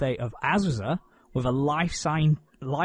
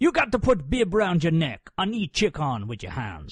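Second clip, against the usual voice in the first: bad put-on Jamaican accent, swooping. Retelling what someone said about eating chicken, in a terrible Jamaican accent. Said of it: "That was a terrible Jamaican accent".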